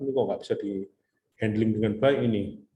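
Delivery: ordinary delivery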